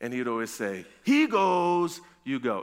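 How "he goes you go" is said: put-on Ugandan accent. Recalling the phrase a coach from Uganda would always say, imitating the coach's Ugandan accent. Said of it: "in his nice Ugandan accent".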